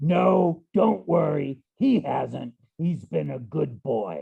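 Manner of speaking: deliberate, slow, booming, drawn-out drawl. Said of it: "it sounded like this".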